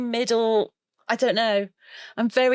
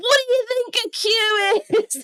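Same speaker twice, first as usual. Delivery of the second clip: put-on very high-pitched, indignant, outraged yell in British accent; 11 semitones higher, 3 dB louder than usual. Retelling how british people waiting in a queue shouted, retelling a shout. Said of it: "at the top of their lungs go".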